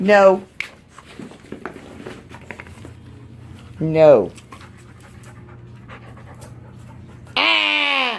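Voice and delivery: low, growled, dog-like growl. Showing the behavior to mimic when playing with a dog, imitating a dog's growl. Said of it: "That's my impression of a dog's growl".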